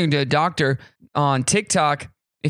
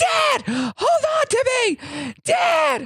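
mock child voice yelling, very high and slow. Retelling a daughter's bike ride: imitating a child yelling. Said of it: ""Quit yelling." Like, everybody in the neighborhood can hear you".

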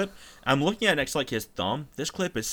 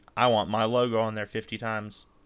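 ordinary delivery

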